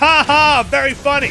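very loud fake laugh. Player addressing an opponent who came to his tent, with a fake laugh. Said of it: "that is a fake laugh".

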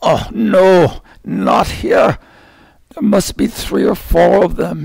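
loud, high-pitched stage whisper. A man spots figures by a lake at night and tells his companion: loud whisper. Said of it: "he said in a loud whisper".

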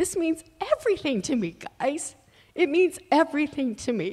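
tearful high voice. Speaker tells the guys what surviving the experience means to her: crying. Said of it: "but I'm crying".

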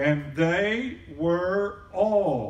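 deliberate, very slow, all words stretched. The speaker reading Acts 2:4 aloud to the audience, very slow. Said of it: "I'm going to do it very slow".

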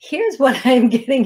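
breaking voice that cracks mid-phrase. Speaker tries again to tell the listener something, voice cracking. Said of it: "and it does it again".

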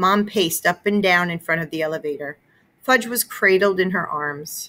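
ordinary delivery

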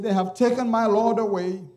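mock quavering, weeping, tearful lament. Speaker retelling a woman's answer to the angels, tearful trembling voice. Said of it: "with tears, trembling voice".

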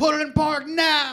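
high-pitched, loud screaming.

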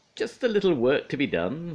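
cheerful, very high-pitched. Narrator reads Pingu's line as he approaches Pinga with Dad's tools: cheerful. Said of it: "said Pingu cheerfully".

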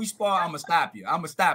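wild, crazy-sounding, unhinged delivery. Showing how Errol says his sparring threat: imitating Errol. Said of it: "this how he say it".

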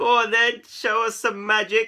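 loud, high, chortling, laughing through the words. Narrator reading a story voices the cats' line to Keith, chortling. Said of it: "they chortled".

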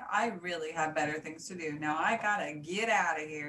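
ordinary delivery, nothing marked

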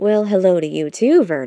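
dry, wry tone, a bit loud. A narrator reads a beaver greeting a wolf: said with a smirk. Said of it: "Robert said with a smirk".

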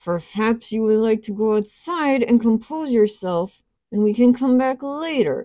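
forced out through clenched teeth, seething. A woman answers her frightened companion while soldiers laugh, through clenched teeth. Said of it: "speaking through clenched teeth".

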